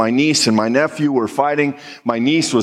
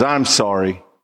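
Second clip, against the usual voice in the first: fake, insincere, put-on sorry tone; 5 semitones lower than usual. Retelling a girl apologizing to her brother, in a fake apology voice. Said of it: "that fake apology voice that isn't real".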